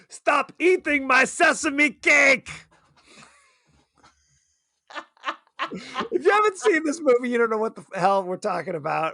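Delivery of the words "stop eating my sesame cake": slow, drawn-out yell. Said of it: "He yells at Tim Curry".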